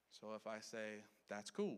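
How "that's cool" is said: genuinely pleased, approving, upbeat, positive tone. Explaining tone of voice, saying a short phrase in a positive tone. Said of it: "that's more of a positive one".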